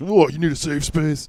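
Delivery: high-pitched, mocking, sneering jeer. Mocking how right-wing critics use a phrase: sneering imitation of critics. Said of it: "fucking right-wing freaks".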